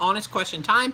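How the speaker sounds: usual speaking voice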